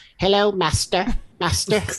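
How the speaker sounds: little robot voice. Describing a robot dog helper from a series, little robot dog voice. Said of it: "he has this little voice".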